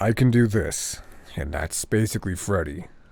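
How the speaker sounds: deep, low voice. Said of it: "how deep can you make your voice go?".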